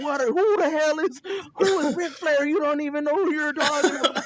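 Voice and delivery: shrill, very high-pitched yelling. Retelling watching the pod while riding a bike: retelling yelling at the TV. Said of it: "And I'm yelling at the T V".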